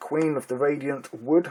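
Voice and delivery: plain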